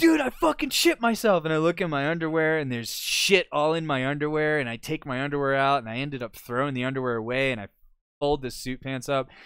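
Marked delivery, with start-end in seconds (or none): 0.0-1.4 very high-pitched, loud screaming. Retelling finding the accident, imitating own screaming. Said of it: "So I start screaming".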